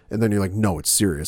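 ordinary delivery

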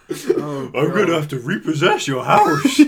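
swooping, bouncing cartoon dog voice. Joining another speaker's joke bit, the speaker plays along in a Scooby-Doo voice. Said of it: "us doing this voice".

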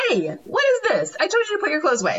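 sarcastic, high, fast, snapping voice.

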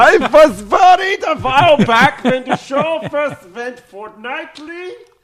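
put-on butchered Scottish accent. Reading a listener's letter aloud: bad Scottish accent. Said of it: "make me butcher, uh, the, uh, Scottish accent".

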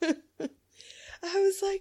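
high, slow, laughing horrified outburst of disbelief.

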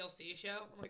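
ordinary talk

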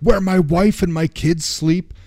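play-acted, high, out-of-control shouting. Speaker recounting how a man yells at Patanjali, imitating him yelling. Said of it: "And he's like yelling at him".

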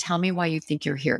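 normal talking voice

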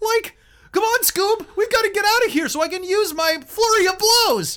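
very high, very loud cartoon holler. Previewing a halfling monk character based on Shaggy: Shaggy voice. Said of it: "based on Shaggy Rogers from Scooby-Doo".

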